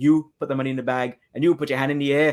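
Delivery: put-on Trinidadian accent. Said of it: "we don't sound very threatening with our accent".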